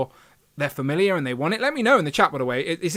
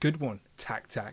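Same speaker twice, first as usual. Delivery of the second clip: deep villainous voice; 5 semitones lower, 9 dB quieter than usual. Rereading a viewer's comment aloud the way it sounded: villain voice. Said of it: "he said that like a villain".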